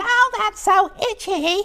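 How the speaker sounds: high-pitched put-on scream. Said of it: "would scream out".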